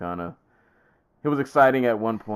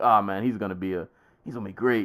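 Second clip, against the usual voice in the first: ordinary talk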